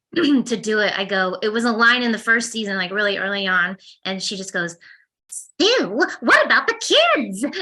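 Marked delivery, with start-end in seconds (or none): 5.2-7.4 voice lifted a notch, high and swooping. A voice actor recalls the early line used to find the character's register: Didi voice. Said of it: "she's a little bit up here from me".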